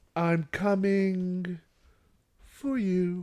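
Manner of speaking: very slow, creepy, broken into single words. Imitating a woman's line from a scene watched today, pauses between each word. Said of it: "she pauses between words. She's like".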